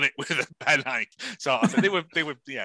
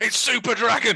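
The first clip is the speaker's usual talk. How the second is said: high-pitched voice calling out; 8 semitones higher, 4 dB louder than usual. Retelling what someone in a video was heard saying: imitating Jay.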